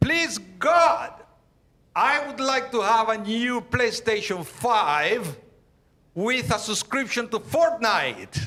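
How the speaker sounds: put-on high-pitched childlike yell, "five" drawn out. Telling a joke about a child praying before bed, retelling a kid's yelled prayer. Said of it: "but he's yelling".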